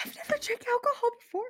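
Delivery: put-on drunk, very high, loud stage whisper. Leaning over to Jessica after spiked punch: drunk trying to whisper. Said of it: "It's that drunk you're trying to whisper".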